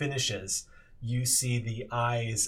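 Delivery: plain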